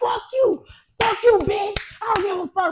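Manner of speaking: very high pitch, whole voice transformed. Retelling cursing at a man over a thrown-away brush, acting out a changed voice. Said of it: "My whole voice was different".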